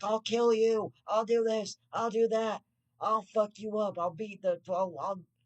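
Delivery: mock, very high, slow, enraged rant. Retelling how mom threatens other drivers on the road: imitating mom going nuts. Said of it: "my mom will go nuts on 'em".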